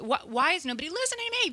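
high, fast, frantic, exasperated voice rattled off.

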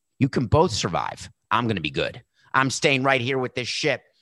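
ordinary talk, nothing marked

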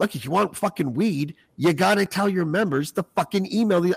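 acted-out high-pitched yelling rant. Retelling a pitch to advocacy groups: imitating own yelling. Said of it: "yelling at them".

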